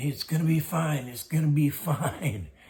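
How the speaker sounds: put-on full-out screaming and hollering, high and loud. Recounting what others said the speaker did, acting out the screaming: retelling her own screaming. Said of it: "And I'm screaming".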